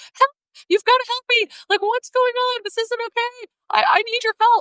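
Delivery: acted, very high, frantic, crying, pleading. Retelling a customer's call to a sales manager, imitating hysterical crying and screaming. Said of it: "crying and screaming hysterically".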